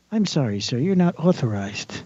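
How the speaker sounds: pleasant, sweet, sugary robot voice. Voicing an imagined robot scanner refusing a transaction: sweet, pleasant robot voice. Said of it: "they'll give it a sweet, like, pleasant voice".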